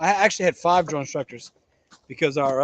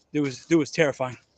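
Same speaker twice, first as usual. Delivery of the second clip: usual speaking voice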